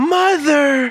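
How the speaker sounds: very high, loud, thrilled excited yell. As he reaches his arm back in defense, she yells excitedly. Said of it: "she yells excitedly".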